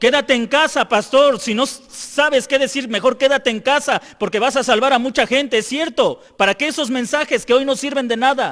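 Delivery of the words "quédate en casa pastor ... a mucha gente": ordinary talk, nothing marked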